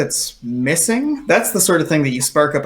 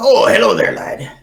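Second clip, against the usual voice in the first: high, loud, cheery pirate voice, belted out. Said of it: "One of them goes".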